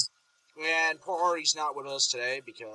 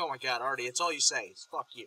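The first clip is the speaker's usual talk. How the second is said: plain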